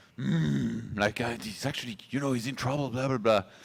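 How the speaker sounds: growling voice with a drawn-out "mm". Explaining a commentator's habit to viewers: imitating Pig's growling commentary. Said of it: "he has these habits of growling".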